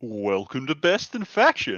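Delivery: swooping, sing-song host-style voice, tune swinging wide. Opening the podcast in imitation of the usual host: Tyler impression. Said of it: "How was my Tyler impression?".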